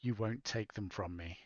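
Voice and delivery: hushed half-whisper with no voice. Declaring an action in a game, saying a character's line: half-whispering in character. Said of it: "I'm just gonna whisper".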